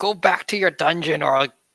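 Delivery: calling out loud, only half-voiced. Playing your character, you threaten a hissing figure squeezed into a corner: shouting. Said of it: "I shout".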